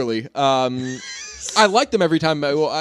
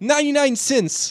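put-on New York actor voice, higher; 11 semitones higher than usual. Showing another speaker a Michael Rappaport impression. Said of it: "you've heard my Rappaport impression".

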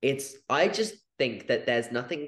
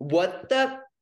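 put-on high, loud child voice with huge emphasis. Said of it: "put so much emphasis on a cuss word".

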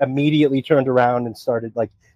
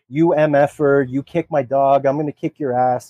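mock furious, enraged tone. Retelling the husband's threat after his dog was kneed: imitating a furious neighbor. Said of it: "basically loses his mind".

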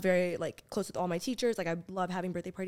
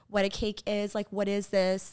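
ordinary talk, nothing marked

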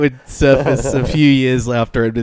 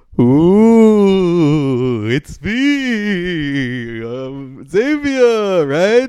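put-on vampire voice, higher pitch; 5 semitones higher than usual. Speaker introduces himself to listeners on the other end of the microphone, Dracula voice. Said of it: "this weird Dracula serial character".

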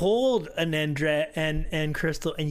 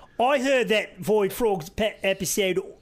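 badly done, put-on Australian accent; 4 semitones higher, 3 dB louder than usual. Joking about a guest on the Void Frogs podcast: put-on Australian accent. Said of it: "that's Australian".

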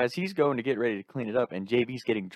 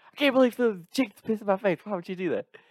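very high, disoriented, just-woken screaming; 10 semitones higher than usual. Speaker acts out a disoriented man who just woke up, retelling a scream. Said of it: "he's screaming".

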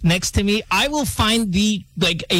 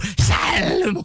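overdone, showy, proud, exaggerated voice; 3 semitones higher than usual. Describing how they order at Starbucks: proud, exaggerated salmon. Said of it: "I say it proudly, like almost exaggeratingly".

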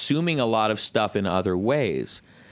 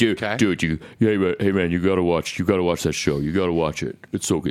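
deep-voiced, pushy, rushed insistence; 3 semitones lower than usual. Speaker retelling a friend's husband's year of nagging, imitating Scott's deep voice. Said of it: "His his voice is very deep".

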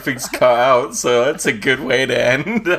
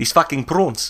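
put-on stock South African accent; 4 dB quieter than usual. Mocking how everyone quotes District 9 when trying the accent: South African accent. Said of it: "whenever you try and do a South African accent".

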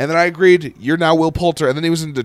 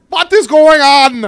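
put-on very high, slow, deliberate German-Israeli accent; 10 semitones higher, 7 dB louder than usual. Watching a movie scene with another viewer, doing a Gal Gadot impression. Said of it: "let me do my Gal Gadot".

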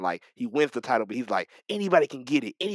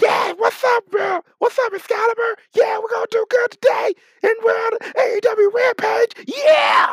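very loud, very high-pitched, hyped-up yelling; 9 dB louder than usual. Speaker mocks Jericho yelling at the commentary table, Jericho yelling impression. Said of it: "can you please stop yelling in your mic?".

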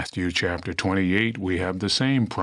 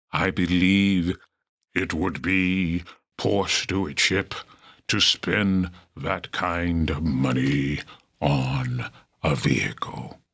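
put-on solemn preacher's pulpit tone. Speaker retelling what he told his wife, using his best ministerial voice. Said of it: "using my best ministerial voice".

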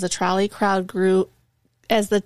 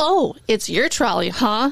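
taunting, mocking yell; 2 semitones higher than usual. Speaker retelling yelling back at a woman on a trolley: retelling a mocking yell. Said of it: "I yelled back at her".

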